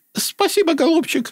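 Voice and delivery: tiny, thin, very high piping voice. Reading a scene with voice directions, this line in a high thin voice. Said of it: "Тоненько".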